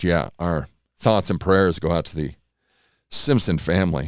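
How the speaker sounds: low, choked-up voice catching with emotion. Host sending thoughts and prayers to a family, choked up. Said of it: "I'm getting choked up".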